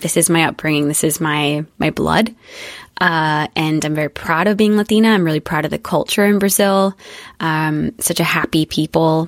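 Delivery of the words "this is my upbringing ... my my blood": usual speaking voice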